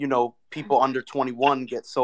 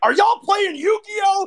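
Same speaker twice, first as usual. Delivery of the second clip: play-acted mad outburst, very high-pitched and loud; 5 dB louder than usual. Retelling how someone complained about card games at an event: imitating Beasley being mad. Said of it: "He was so mad".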